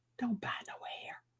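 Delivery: very soft, faint whisper. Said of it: "he was whispering".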